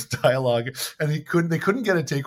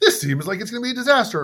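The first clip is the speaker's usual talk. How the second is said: stiff, stilted, formal-sounding delivery, pitched up; 9 semitones higher, 4 dB louder than usual. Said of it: "the only style of talking in this movie is like".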